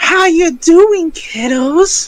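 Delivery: sinister, creepy put-on voice, way up high. Showing how they voice him to sound creepy: creepy put-on voice. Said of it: "the way I try to do my voice where he sounds creepy".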